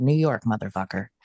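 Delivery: acted emphatic, proud, low declaration. Telling how they answered a man asking where they were from, retelling a proud declaration. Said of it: "I proudly said".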